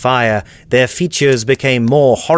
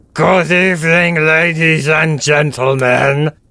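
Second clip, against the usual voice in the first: hissing, slurping, sucking fish creature voice; 4 semitones higher than usual. Narrator reading the lead fishman greeting the silent crowd, hissing, sucking voice. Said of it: "he said in a hissing, sucking voice".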